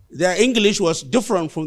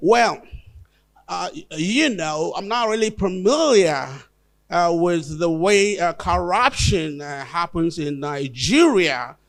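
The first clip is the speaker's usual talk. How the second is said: hesitant, slow, put-on, affected foreign-style accent. Retelling how a professor back from Harvard talked to the community: imitating a put-on foreign-style voice. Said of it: "why are you talking like this?".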